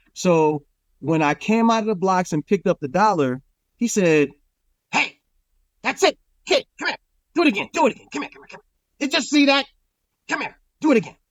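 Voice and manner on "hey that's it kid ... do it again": very high, rapidly rattled-off calls. Retelling a race start, the speaker quotes a man who talked like the Penguin: Penguin-like voice. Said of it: "Boss Cross kind of talked like the Penguin".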